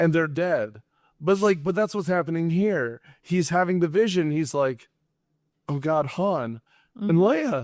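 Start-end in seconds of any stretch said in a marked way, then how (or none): 5.7-7.6 slow speech with voice cracking. Retelling a film scene where the character has a vision: imitating Luke's voice cracking. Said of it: "And his voice cracks".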